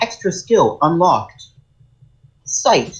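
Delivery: put-on AI god voice, announcer style. Reacting to an animated show with co-hosts, doing the ai god voice. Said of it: "I like the fucking A I god voice inside of him".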